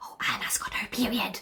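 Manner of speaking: hushed, breathy whisper. Retelling what mom told dad at the entrance: retelling mom's hushed voice. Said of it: "in hushed voice".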